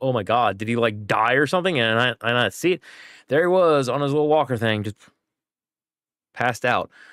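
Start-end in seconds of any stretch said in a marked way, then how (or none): 0.0-1.8 mock panicked speech. Retelling finding a child passed out, imitating own panic. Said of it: "I was still panicking".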